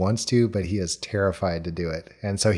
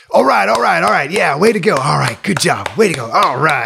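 very loud, rough, hollering coach voice; 8 semitones higher, 9 dB louder than usual. Retelling a comedy routine's impression: imitating a high school basketball coach. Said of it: "That's my high school basketball coach".

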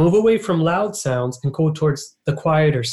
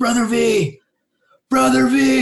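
high, drawn-out calling shout, hollered from far off; 8 semitones higher than usual. Retelling a middle school kid calling from fifty feet away: imitating a kid shouting. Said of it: "kinda shouting at me".

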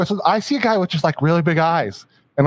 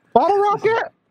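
voice going up high, higher. Listing movies excitedly to another speaker: high-pitched voice. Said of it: "do you hear how high my voice is?".

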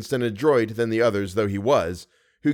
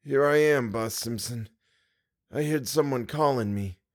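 faint, dried-up wheezing voice, short of breath; 4 dB quieter than usual. Narrator reads a man answering someone who called him, faint, wheezy, breathless voice. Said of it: "dried-up voice, made wheezy and breathless".

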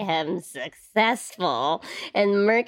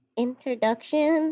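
simple, understated one word, pitched up; 5 semitones higher than usual. Voicing a character who takes off his helmet: speaking very quietly. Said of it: "just says very quietly".

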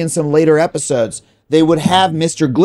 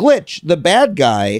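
ordinary talk, nothing marked

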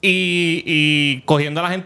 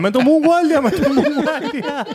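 put-on panicked yell, pitched higher; 10 semitones higher than usual. Retelling how Robert fell at the start of the race: imitating Robert yelling. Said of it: "empieza a gritar".

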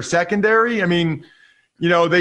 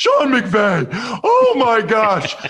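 put-on gushing, effusive voice, pitched higher; 4 semitones higher than usual. Mocking how every Rams score got credited to the coach: imitating Paulie. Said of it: "I sound like Paulie doing my impersonation".

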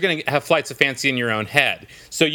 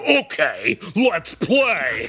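put-on demon voice; 4 semitones higher than usual. Redoing a childhood friend's invitation to play, in a demon voice. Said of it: "You didn't use your demon voice".

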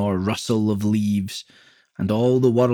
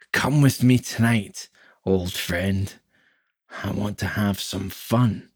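put-on drunk man voice, tipsy; 2 semitones lower than usual. A drinking friend urges the narrator to come out with him tonight: drunk man's voice. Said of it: "He took a swig from his bottle and teetered back and forth. Patches of scalp glowed through his once lush red hair. Knobby elbows bulged beneath his skin like tumours. His eyes sat so far back into hi".

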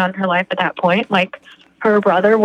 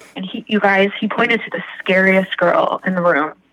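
usual speaking voice

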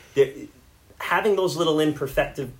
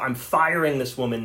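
ordinary talk

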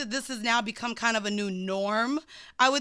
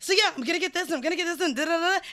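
acted-out manic, high, excited run-on chatter; 6 semitones higher than usual. Retelling a phone call with mom after grocery shopping: imitating own manic rambling. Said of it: "You sound really manic".

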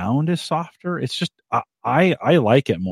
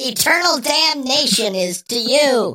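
put-on voice, very high and squeaky, silly; 13 semitones higher than usual. Answering a joke about how Satan really sounds: Satan voice. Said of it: "Satan actually sounded like that".

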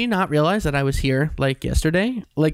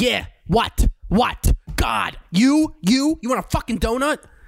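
mocking, rude, pitched-up tone; 7 semitones higher than usual. Contrasting Dunkin' Donuts staff, imitating a rude Long Island clerk. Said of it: "they're like".

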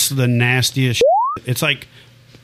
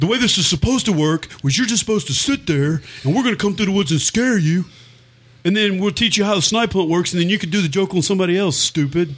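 high-pitched mocking voice. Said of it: "And they're like".

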